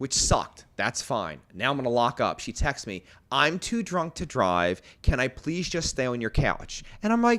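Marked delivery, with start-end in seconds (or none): none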